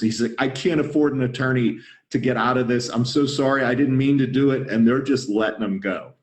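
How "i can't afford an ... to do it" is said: play-acted tearful, sobbing, begging voice. Speaker retells a man being led away by armed men, imitating someone crying. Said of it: "he is absolutely in tears".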